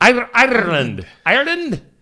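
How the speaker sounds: very high attempted Irish accent, slipping into Scottish. Reading good news about Ireland, trying out an attempted Irish accent.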